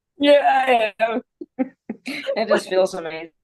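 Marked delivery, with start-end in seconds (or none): 0.2-1.2 words broken up by laughter throughout. Answering a question after a breathing exercise, laughing while talking. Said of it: "are you laughing".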